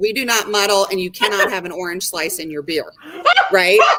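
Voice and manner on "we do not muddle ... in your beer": normal talking voice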